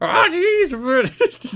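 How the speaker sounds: very high, loud swooping yelp, "jeez" stretched. Joking about the impression, saying it as Morty. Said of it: "Jimmy Hart as Morty".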